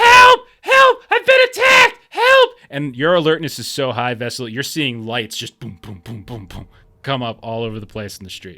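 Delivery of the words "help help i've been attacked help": very high, very loud, shrill, panicked screaming. Voicing a character chasing the players, screaming for help. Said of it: "she's behind you screaming".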